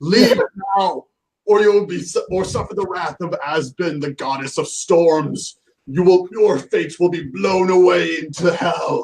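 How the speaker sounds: high, stormy, threatening proclaiming voice. A player's character shouts at a cornered enemy, voice boosted by a spell, shouting. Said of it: "I shout at him".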